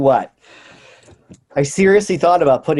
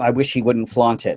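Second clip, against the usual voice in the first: normal talking voice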